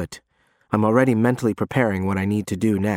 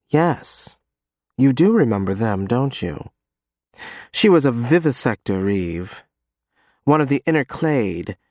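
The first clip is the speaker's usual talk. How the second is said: ordinary delivery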